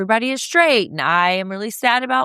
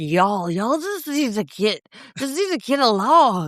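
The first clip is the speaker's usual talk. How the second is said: play-acted words smeared together, slurred; 2 semitones higher than usual. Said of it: "so he's slurring".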